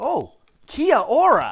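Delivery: shrill, loud, swooping North American accent, every letter sounded. Imitating how they pronounce every letter of 'kia ora': put-on north american accent. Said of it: "my North American pronunciation... it comes out something like this".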